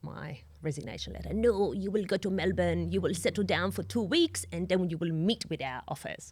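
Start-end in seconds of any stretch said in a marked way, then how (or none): 1.3-6.3 English spoken with a put-on French accent. Retelling how the CEO ripped up a resignation letter, imitating Frank's French accent. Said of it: "in his best French accent".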